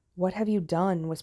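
whispered, voice shaking and trembling. The envoy speaks to the Darkling in a shaking whisper. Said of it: "whispered the envoy, his voice shaking".

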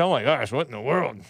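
muttered under the breath, like a stage aside. Imitating a woman in a video she shared: talking under her breath. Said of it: "she's all talking under her breath".

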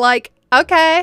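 put-on high, loud Valley Girl accent. Retelling a woman's last words before she walked away, in a Valley Girl voice. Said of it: "I love doing a good old Valley Girl voice".

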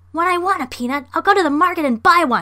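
enraged, very high, very loud furious shriek. Reading aloud, a blue monkey hit by a flicked peanut shouts at the men in a rage. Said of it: "shouted the monkey in a rage".

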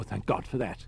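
plain

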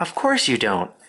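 comforting, reassuring, consoling voice. Charlotte answers Wilbur, who says he does not want to die, in a comforting voice. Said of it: "said Charlotte in a comforting voice".

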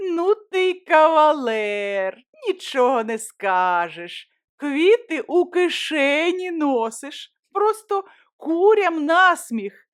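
high, scornful, sneering mockery, stretching out кавалер. A girl is handed a small bouquet from the narrator's pocket, contemptuous laughing. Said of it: "Олечка зневажливо розсміялася".

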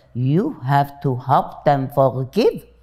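put-on Viennese Austrian German accent. Retelling what a teacher said to a question: imitating heavy Viennese accent. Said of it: "with his Viennese heavy accent".

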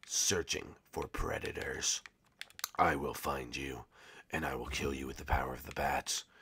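put-on low, quiet, hushed caped-hero voice. Talking to viewers while back in character, Batman voice. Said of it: "ready to be the Batman again".

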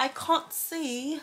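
put-on British accent. Showing how british people talk, in a put-on british accent. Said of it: "When they talk like this".

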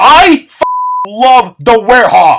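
slow, loud, defiant shout.

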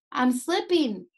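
desperate, pleading cry. Narrator reads a character calling out to the narrator, desperate. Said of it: "Sanjo said desperately".

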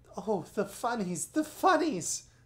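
loud, high outburst breaking into laughter. Lucy cries out to the magician, bursting into laughter. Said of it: "cried Lucy, bursting into laughter".

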